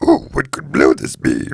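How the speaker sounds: very low, creaky character voice. Trying out a Yoda impression after a friend asks for it: Yoda voice. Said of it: "Give me your Yoda".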